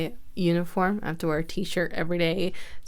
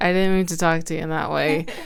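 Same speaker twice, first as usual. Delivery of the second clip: ordinary delivery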